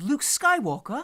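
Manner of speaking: very high pitch, bursting with excitement. Retelling an excited reaction to a map: Rey impression. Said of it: "That's my Rey impression".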